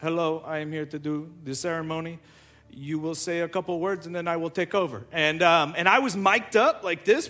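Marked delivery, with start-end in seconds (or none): 0.0-5.0 soft, heavy, thick put-on Ukrainian accent. A woman from Ukraine arrives to do the ceremony and speaks in a very thick Ukrainian accent. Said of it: "she had a very thick accent".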